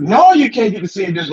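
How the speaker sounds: mock cross, angry, mad tone. Retelling how the woman at the restaurant answered: imitating a mad woman. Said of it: "she was mad".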